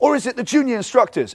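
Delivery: fun, high call-out. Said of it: "I'll raise my voice in a fun way".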